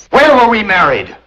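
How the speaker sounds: loud, high, demanding shout. Confronting someone who claims to be married to the speaker, shouting. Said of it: "Don't shout".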